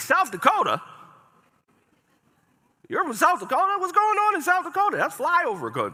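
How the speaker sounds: put-on, very high, loud, scornful disbelief. Retelling what people said on seeing the ID: imitating a disrespectful tone. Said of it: "say it with a little bit of disrespect".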